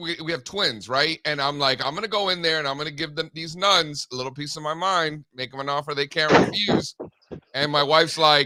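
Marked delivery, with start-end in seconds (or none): none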